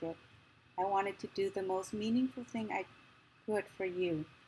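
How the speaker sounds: ordinary delivery, nothing marked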